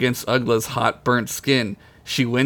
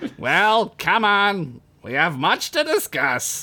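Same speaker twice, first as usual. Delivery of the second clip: put-on storybook wizard voice, high and swooping; 7 semitones higher than usual. Telling a story, voicing a character who greets another, in the right character voice. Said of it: "I gotta do the right voice".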